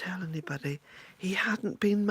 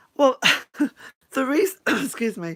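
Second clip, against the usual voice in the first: choking and coughing mid-sentence, much higher, louder; 6 semitones higher, 10 dB louder than usual. Starting a live video greeting, the speaker breaks off, choking mid-sentence. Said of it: "I'm choking now".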